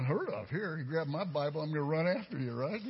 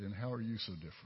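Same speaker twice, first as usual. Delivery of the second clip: very quiet, hushed, gently spoken; 7 semitones lower, 6 dB quieter than usual. Retelling a reply heard while praying: imitating a very quiet voice. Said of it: "In very quiet voice".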